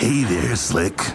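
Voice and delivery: slick, nefarious shady-salesman huckster voice. A storyteller voicing Greg greeting another character, in Greg voice. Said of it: "gonna do a new new voice ... that sounds very nefarious".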